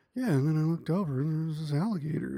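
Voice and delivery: laid-back, unbothered, calm, totally chill delivery. Retelling how he casually tells an alligator story: imitating Jeremy, very chill. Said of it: "he's so chill as a person".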